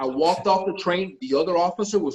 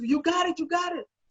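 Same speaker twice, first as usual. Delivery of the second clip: put-on, high, thrilled, excited screaming and hollering; 12 semitones higher, 4 dB quieter than usual. Retelling how she screamed the news that he got the role, imitating her screaming. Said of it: "she's screaming and hollering".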